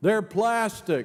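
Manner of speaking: loud, high-pitched blurt for all to hear. Retelling a church story, a woman turns to the leaving congregation: loud voice. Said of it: "she turns in a loud voice and says".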